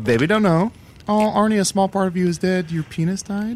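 high-pitched, squeaky talking badger voice. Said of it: "Chunt the Talking Badger".

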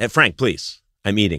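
ordinary talk, nothing marked

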